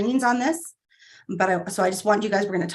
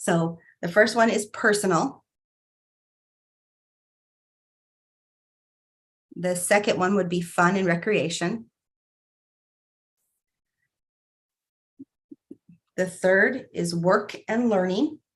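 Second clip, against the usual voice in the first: slow, unhurried, deliberate, spelled-out delivery. A speaker walking an audience through a numbered list, speaking slowly. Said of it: "I'm going to tell them to you slowly".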